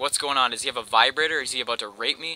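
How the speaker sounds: ordinary talk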